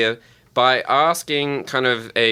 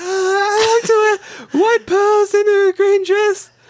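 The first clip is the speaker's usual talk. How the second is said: put-on falsetto voice; 4 dB louder than usual. In a game of doing a hard voice, answering what they wear, in falsetto. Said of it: "Get into your falsetto".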